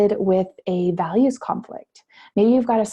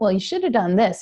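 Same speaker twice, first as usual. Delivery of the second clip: strong New Jersey accent, faster. Voicing your nagging inner critic, in a strong Jersey accent. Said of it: "She's got this really strong Jersey accent".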